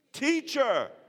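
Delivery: high, loud, heartfelt, sincere-sounding voice.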